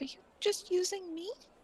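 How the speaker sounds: tiny, very small, soft high voice. Game master voicing a small voice in a player's head, very small voice. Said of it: "you hear a very small voice in your head say".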